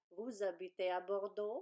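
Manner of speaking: pitch rising at the end on Bordeaux. Explaining French questions to learners, demonstrating rising question intonation. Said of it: "You just raise your voice".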